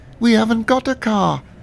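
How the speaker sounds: very high, choked, strangled squeaky falsetto. Narrator reads a man's reply to the narrator, squeaky strangled falsetto. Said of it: "he squeaked in a sort of strangled falsetto".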